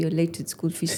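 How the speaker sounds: ordinary delivery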